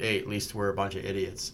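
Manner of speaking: usual speaking voice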